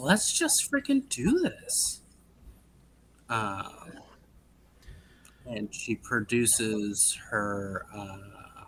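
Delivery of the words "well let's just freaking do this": very high, rushed, giddy overexcited burst. Storyteller voicing Lenara as she produces her whip, overly excited. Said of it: "gets overly excited and she's like".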